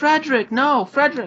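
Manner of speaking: very high, loud, calling shout. Voicing someone calling after a boy from a farm doorway: shout from a doorway. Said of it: "shout from the doorway".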